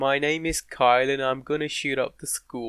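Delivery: attempted put-on American accent. Urged by the other speaker to try one, the speaker attempts an American accent. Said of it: "Please try it".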